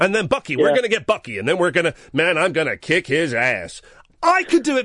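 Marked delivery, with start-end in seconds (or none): 0.0-3.8 put-on American movie-style accent. Showing a co-host a better american accent than an actor's. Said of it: "I could do a better American than Martin Freeman can".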